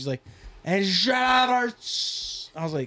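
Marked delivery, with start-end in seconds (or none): 0.6-2.5 good put-on announcer impression, higher pitch. Act out a man announcing players, in a good impression of him. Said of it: "You do a good impression of him".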